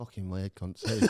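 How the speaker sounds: very low mutter under the breath. Retelling what someone said under his breath: imitating a mutter under breath. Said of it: "I heard him under his breath mutter".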